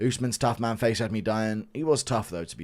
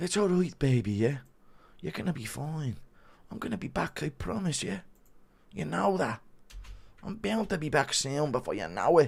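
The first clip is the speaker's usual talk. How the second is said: mock-comforting put-on voice, much quieter; 5 semitones higher, 4 dB quieter than usual. Doing a requested impression of one man comforting a crying man, Conor McGregor impression, comforting. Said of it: "Impression of Dana crying after Connor busted his A C L and Connor comforting him".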